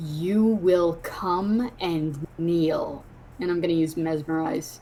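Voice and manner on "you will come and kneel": very low, slow, commanding voice. A player character looks him in the eyes and points ahead: very low, commanding voice. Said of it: "I say in a very like low, commanding voice".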